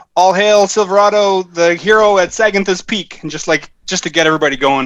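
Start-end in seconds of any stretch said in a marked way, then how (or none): 0.2-3.2 yelling, much higher. Putting a beer tankard on the table to get everybody going, yelling out a toast. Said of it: "yell out".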